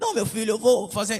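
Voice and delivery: put-on young man's voice faking an old man's voice.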